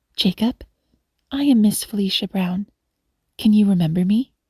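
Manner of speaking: usual speaking voice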